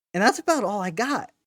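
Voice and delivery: small crack breaking the voice mid-line. Host wrapping up a plug for the show's Patreon and socials, voice cracking. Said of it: "You like that little voice crack?".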